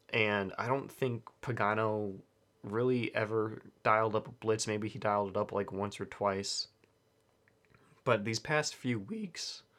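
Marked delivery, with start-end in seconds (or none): 8.0-9.6 voice breaking and cracking mid-phrase. Talking about a football defense's recent weeks, with a voice crack. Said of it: "sorry for that voice crack right there".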